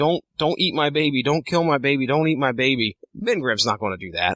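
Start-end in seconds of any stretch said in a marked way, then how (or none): 0.0-3.0 panicked, acted-out screaming, begging cry. Retelling a scene with a monster and a family, speaker acting out a mother screaming. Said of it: "she's screaming bloody murder".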